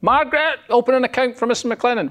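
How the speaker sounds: high voice calling out loudly across a distance.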